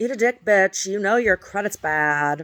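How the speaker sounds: loud, flamboyant drag-queen-style voice. Retelling harassing phone calls from a caller: imitating a flamboyant caller. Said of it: "sounded like a drag queen".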